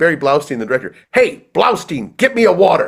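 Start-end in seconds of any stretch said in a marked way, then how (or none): 1.1-2.9 put-on old-school vaudeville comic performance voice. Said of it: "He would always say things like".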